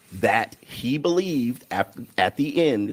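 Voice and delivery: slow, deliberate, drawn-out, spelled-out pace. Explaining a point to someone who keeps interjecting, speaking slowly. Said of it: "I'll speak slowly for you".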